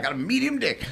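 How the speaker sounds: put-on funny American Southern accent. Quoting a comedian's opening line on stage: funny southern accent. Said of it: "he's got this really funny Southern accent".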